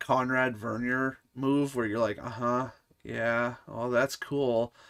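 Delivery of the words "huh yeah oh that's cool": put-on awkward manner, quieter. Retelling replying to a game character: imitating an awkward brush-off. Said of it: "it gets really awkward for a split second".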